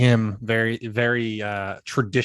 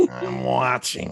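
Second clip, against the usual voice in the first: put-on cartoon monster voice; 2 semitones higher than usual. Playing along after another player says the voice sounds like Monsters, Inc.: Monsters, Inc. character voice. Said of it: "from Monsters, Inc".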